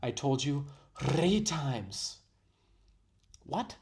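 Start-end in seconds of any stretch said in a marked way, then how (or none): 0.0-2.2 put-on overdone Indian accent, over-rolled r's, very slow, loud. Mimicking a video clip's line with an overdone rolled-R Indian accent. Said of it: "It sounds like she Googled how to roll your R's".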